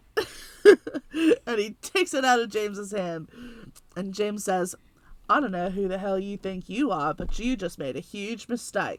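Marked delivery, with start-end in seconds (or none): 5.2-8.9 put-on strong Aussie accent, put on. Retelling a confrontation story, quoting one man's threat in an Australian accent. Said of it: "the best Australian accent I've ever done".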